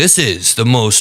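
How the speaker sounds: put-on affected, pompous, posh-sounding voice. Mocking how the speaker in the clip talks: mocking pompous pinky-up impression. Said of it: "speaks like his pinky should be held up".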